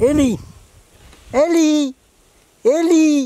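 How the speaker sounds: calling out, high and loud.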